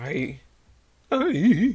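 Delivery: high, loud voice breaking on the words. Player explaining which monster they enjoy fighting in this game, voice cracking. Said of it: "Sorry. Voice crack".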